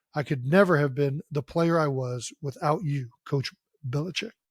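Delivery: ordinary talk, nothing marked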